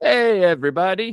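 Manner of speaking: very loud, high-pitched, belted out. Opening the video with a greeting in Doctor Nick voice. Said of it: "That's Doctor Nick from The Simpsons".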